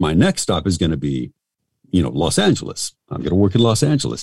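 ordinary delivery

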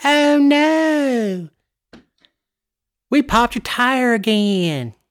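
very high, put-on Paulding County accent. Recalling a DOT commercial about a pothole, in a put-on Paulding County voice. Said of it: "that's my Pauldy County voice".

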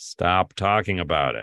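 acted-out threatening, ominous, menacing tone. Describing community members telling someone to stop talking about it, mock-menacing. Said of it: "they're so menacingly like".

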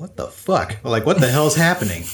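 ordinary talk

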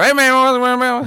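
put-on very high Louisiana accent, "man" drawn out long. Telling about arriving before dinner, doing an impression of a dad's greeting. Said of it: "who talks exactly like the guy from the water".

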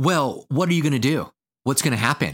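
accusatory tone.

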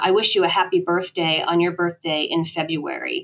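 ordinary talk

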